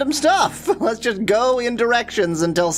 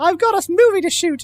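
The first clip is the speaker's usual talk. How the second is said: showy put-on British accent, pitched up; 8 semitones higher, 4 dB louder than usual. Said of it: "an accent tour of the British Isles here".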